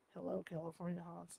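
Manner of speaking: very quiet, hushed, deepened put-on voice. Speaker lowers their voice for a greeting: Roz Doyle voice. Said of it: "I'm looking for an E Q so I can lower my voice a little bit. I'm kind of like going for that Roz Doyle sound".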